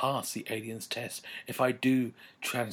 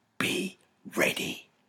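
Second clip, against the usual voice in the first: rasping, hoarse, under-the-breath whisper. Caged narrator tells his brother to be ready, hoarse whisper. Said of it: "I whisper hoarsely".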